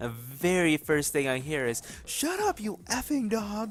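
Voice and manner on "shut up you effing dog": put-on, very high-pitched, shrill hollering yell. Retelling a caller's first words on the phone: imitating a woman yelling at a dog. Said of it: "she was yelling at the dog".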